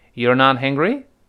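rising pitch at the end on hungry. Chinese lesson on spoken English questions: rising question intonation on hungry. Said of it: "这个陈述句语调往上一升就变成疑问句了".

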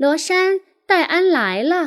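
high, ringing voice calling out loudly.

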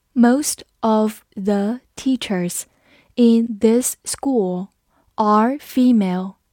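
clear, careful, even read-aloud. Reading an English sentence aloud together once: slow read-through. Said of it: "我们慢读一遍。".

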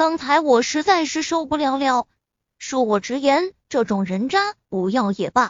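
ordinary delivery

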